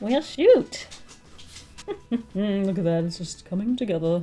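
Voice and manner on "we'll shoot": giggly, pleased, happy giggling talk. While drawing a face with eyes and hair: happy giggling. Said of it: "[Giggles happily]".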